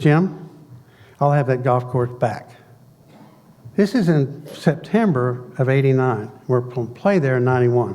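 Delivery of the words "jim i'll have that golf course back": plain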